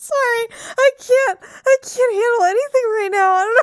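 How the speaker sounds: giggling through words. Apologizing after an interruption, giggling and laughing while talking. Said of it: "I got the giggles".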